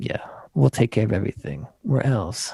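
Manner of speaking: put-on seductive, flirty Californian voice. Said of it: "weird, like, California fuck me voice".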